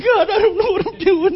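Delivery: mock very high, frightened, cowardly little voice. Retelling Moses hiding behind a rock: imitating a cowardly plea. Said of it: "Kind of the cowardly lion kind of a thing".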